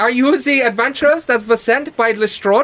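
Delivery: put-on small gnome character voice with German accent. Game master voicing a gnome greeting the adventurers: German-accented gnome voice. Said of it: "German gnome".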